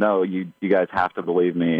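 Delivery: ordinary delivery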